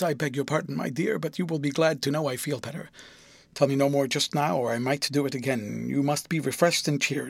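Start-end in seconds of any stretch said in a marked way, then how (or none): none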